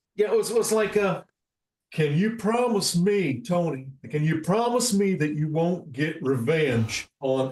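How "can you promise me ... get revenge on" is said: slow, drawn-out TV host voice leaning on each word. Showing how a Doctor Phil voice came out by accident: Doctor Phil impression. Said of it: "I found out that I could do Doctor Phil".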